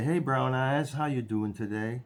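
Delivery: put-on sweet Southern accent. Retelling how a nurse from Tennessee always greeted the speaker, in a sweet Southern accent. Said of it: "in her sweet southern accent".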